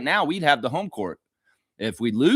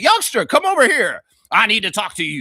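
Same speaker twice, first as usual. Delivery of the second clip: put-on loud, high old-man voice calling out; 8 semitones higher, 7 dB louder than usual. Talking to a co-host, acting out an old man calling a youngster over. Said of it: "This is like an old man".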